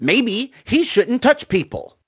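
acted, irritated, angry, pissed-off tone. Retelling a stranger's reply to being touched: imitating a pissed-off woman. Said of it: "super pissed off".

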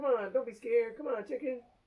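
mocking, goading taunt. Retelling how the dj made fun of them: imitating someone teasing. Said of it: "He's teasing me".

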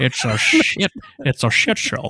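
put-on Scottish accent. Opening a movie review podcast with a co-host, bad Sean Connery impression. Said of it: "definitely the worst Sean Connery the world's ever heard".

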